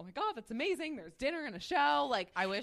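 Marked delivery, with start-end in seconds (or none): 0.0-1.0 put-on, very high, swooping, freaking-out excited delight. Retelling getting a call while out to breakfast: retelling freaking out with joy. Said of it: "And I'm freaking out".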